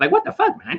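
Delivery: very high, squeaky cartoon voice. Describing how some people talk, the speaker imitates them in a Mickey Mouse voice. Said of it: "They sound like Mickey Mouse or something".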